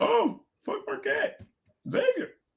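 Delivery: half-whispered, breathy, cocky know-it-all scoff. Mocking bettors who overthink the game: imitating overconfident sharp bettors. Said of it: "the sharp chasers today are like".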